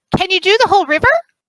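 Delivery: shrill, very high, loud shout. Voicing a character replying from below: shouting back up in character. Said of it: "Yurine shouts back up".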